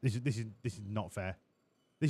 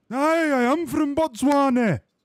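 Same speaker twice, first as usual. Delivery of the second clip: Scottish voice, higher and louder; 14 semitones higher, 7 dB louder than usual. Answering that they are from Botswana: Scottish accent. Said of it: "you sound a bit Scottish".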